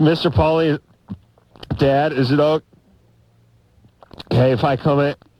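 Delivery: high, halting voice, words broken by big gulps of air. Showing how he wants a character to ask paulina's dad something, take big gulps of air. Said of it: "where he takes those big gulps of air".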